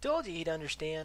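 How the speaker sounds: playful, light, high-pitched teasing. After a girl kisses her boyfriend, a young man teases them, teasing. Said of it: "Ron teased".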